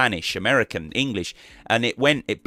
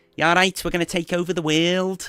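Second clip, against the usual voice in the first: put-on Scouse accent, pitched a bit higher; 8 semitones higher than usual. Retelling what footballer Steven Gerrard used to say; Steven Gerrard Scouse accent. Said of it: "I'll try and say it in a Liverpool a Scouse accent".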